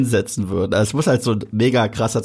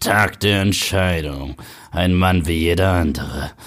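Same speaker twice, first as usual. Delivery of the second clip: deep German movie-trailer voice; 4 semitones lower than usual. Discussing a german film title, the speaker announces it in a german movie-trailer voice. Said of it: "mit der deutschen Trailerstimme".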